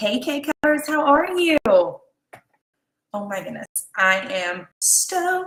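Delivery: stoked and thrilled, with swooping pitch. Greeting viewers by name and thanking them: excited. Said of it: "Can you tell?".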